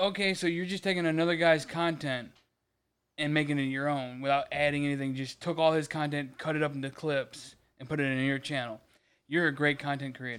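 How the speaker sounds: ordinary delivery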